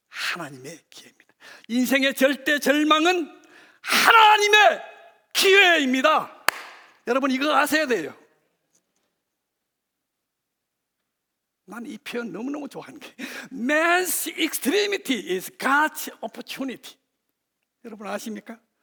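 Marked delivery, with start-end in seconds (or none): 1.6-18.5 English spoken with a Gyeongsang accent. A preacher quoting an English saying to the congregation, in Gyeongsang-accented English. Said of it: "제 경상도 영어 발음 ... 이 대구 발음입니다".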